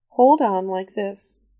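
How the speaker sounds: usual speaking voice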